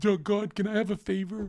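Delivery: very high, pleading prayer voice. Mocking how others pray for favors: imitating someone praying. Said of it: "favors like you guys when you pray".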